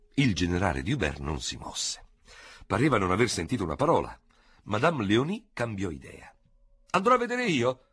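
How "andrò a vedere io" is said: very high, yelled call. Narrator reads a woman speaking in front of the general, shouting. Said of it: "gridò".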